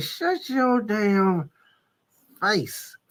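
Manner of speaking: mock clenched-teeth speech. Retelling how grandma scolded in church, imitating talking through clenched teeth. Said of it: "She got her teeth together".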